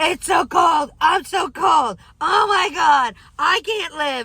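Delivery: high, drawn-out, complaining yell. Speaker retelling pumping gas in the cold, retelling a yell. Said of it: "and I'm yelling".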